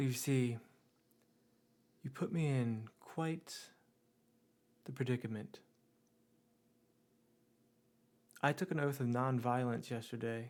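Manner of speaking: low, private voice. A game character speaks so only one person can hear, in a lowered voice. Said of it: "he'll lower his voice to where only she should be able to hear him".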